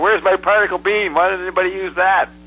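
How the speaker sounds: fast, high-pitched shout. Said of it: "he yells out".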